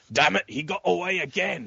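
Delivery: grumbling, surly, high put-on British accent. Mocking a line heard again and again, in a mock-surly british accent. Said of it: "in a surly British accent".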